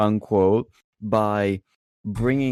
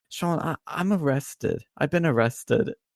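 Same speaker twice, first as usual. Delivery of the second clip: choked, tearful, higher-pitched crying stammer, acted out; 6 semitones higher than usual. Retelling what a woman said on the phone, imitating someone crying. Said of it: "And she's crying".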